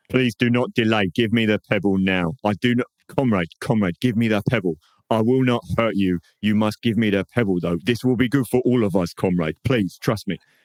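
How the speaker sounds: nervous, anxious, urgent pleading, pressing hard. Playing a character in a roleplaying scene, anxious pleading. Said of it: "he's obviously quite anxious".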